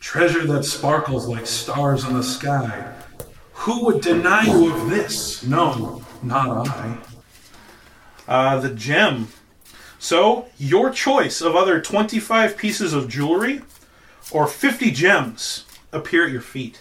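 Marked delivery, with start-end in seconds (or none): 0.0-7.0 spectral, ghost-like voice.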